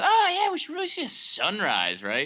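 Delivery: very high, sing-song, swooping, persistent casual coaxing. The speaker acts out their past self nudging someone, retelling casual persistence. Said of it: "casually persistent with".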